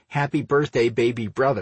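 ordinary delivery, nothing marked

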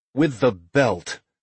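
plain

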